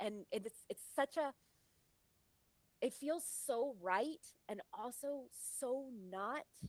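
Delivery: tearful voice, on the verge of tears. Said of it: "I'm tearing up".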